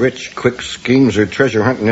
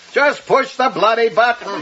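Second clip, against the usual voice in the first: shrill, very high-pitched shout; 12 semitones higher than usual. In a time-travel scene, one character urges another to push the activating button, shouting. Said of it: "You don't have to shout".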